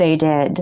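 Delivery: put-on, acted-out deadpan delivery. Retelling how a cast member stared and answered a complaint, imitating a deadpan reply. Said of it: "Christopher Guest stares at him and deadpans".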